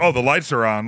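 ordinary talk

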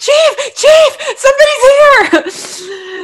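very high, loud, dragged-out shouting. Retelling a scene where Cap runs through the firehouse: imitating Cap yelling. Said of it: "he yells that someone is out there".

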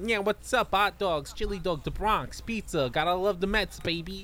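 Brooklyn loser guy voice. Speaker imagines how a dubbed character should sound, in a brooklyn accent. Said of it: "he's a Brooklyn loser. He's got to be like".

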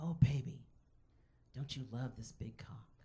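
put-on whisper. Retelling what a date said during sex: imitating a whisper. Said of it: "He whispers in my ear".

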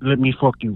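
attempted, put-on Russian accent. Describing how a performer talks, imitating Crystal's Russian accent. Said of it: "I love how [name]'s trying to do the accent".

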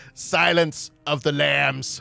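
slow, drawn-out, creaky voice. Announcing the episode's movie title: Jim Carrey impression. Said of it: "let me do the Jim Carrey".

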